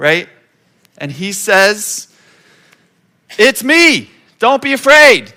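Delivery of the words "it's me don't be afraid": high, booming, drawn-out yell at full volume. Retelling words called out across a storm: imitating Jesus yelling. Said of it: "Jesus probably yelling, like, as loud as he can".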